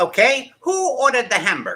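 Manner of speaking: high, loud voice with swooping pitch. Acting out a bar scene, in the Cat Boss voice. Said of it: "I gotta do the cat boss voice".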